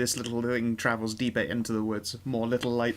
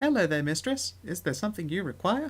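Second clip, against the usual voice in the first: put-on teeny, tiny, high-pitched fairy voice; 7 semitones higher than usual. A fairy leans against the mistress's ear and speaks, very tiny fairy voice. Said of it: "its voice is very, very tiny".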